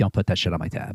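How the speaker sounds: side-of-the-mouth stage whisper, spoken as an aside. Playing a character telling the bartender not to charge him: whisper. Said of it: "whisper to the bartender".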